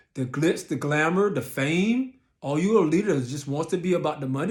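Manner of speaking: ordinary talk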